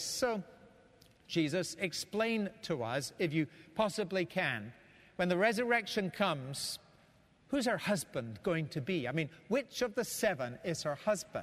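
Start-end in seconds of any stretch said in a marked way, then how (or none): none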